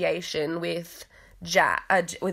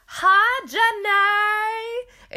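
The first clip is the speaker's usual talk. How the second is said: high-pitched, loud, drawn-out delivery; 6 dB louder than usual. Retelling a funny moment when a sister called, in a very Forrest Gump-esque voice. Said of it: "in a very Forrest Gump esque voice".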